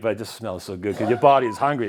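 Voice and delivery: ordinary talk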